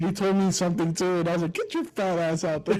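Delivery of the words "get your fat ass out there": put-on angry cursing outburst. Retelling cussing out a boss: imitating cussing someone out. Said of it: "'cause I cussed him out that day too".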